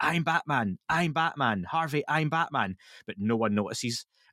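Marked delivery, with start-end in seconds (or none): 0.0-2.8 slow, high, drawn-out shout. Describing Batman standing up in a fleeing crowd, retelling Batman's shout. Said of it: "stands up and starts shouting".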